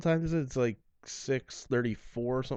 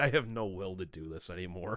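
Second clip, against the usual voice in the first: mock-deflated voice, lower and quieter; 5 semitones lower, 6 dB quieter than usual. Imitating how the other speaker sounds, in a mock-deflated voice. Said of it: "more like a balloon deflating".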